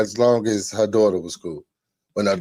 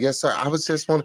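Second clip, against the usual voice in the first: mock scared, high, terrified little voice; 5 semitones higher, 3 dB quieter than usual. Retelling being caught by a girl's father, imitating a terrified reply. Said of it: "I was terrified".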